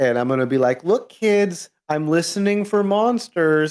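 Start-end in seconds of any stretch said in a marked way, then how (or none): 0.8-3.7 teasing yell, high and slow, from behind. Playing a character at a door, calling back to the kids: yelling back behind. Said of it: "I'm gonna yell this back behind me".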